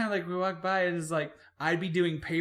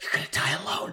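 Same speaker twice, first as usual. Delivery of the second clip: imitated own past whisper; 3 semitones lower than usual. Retelling whispering a mock insult into a coworker's ear: retelling a whisper. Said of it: "And I just whispered in here".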